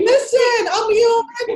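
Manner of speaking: high, loud, dramatic theatrical cry.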